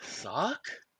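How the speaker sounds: groggy, drowsy, half-awake voice. Coming to after being healed: groggy, just waking in character. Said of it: "Kinda groggily come to".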